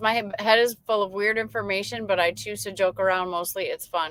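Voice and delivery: ordinary talk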